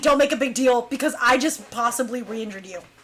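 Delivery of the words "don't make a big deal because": plain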